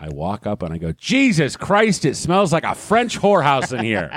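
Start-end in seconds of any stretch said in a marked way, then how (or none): 0.9-4.2 put-on high bellow at the top of the lungs. Speaker retells what they shouted after getting on a bus: retelling a full-lung shout. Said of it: "at the top of my lungs".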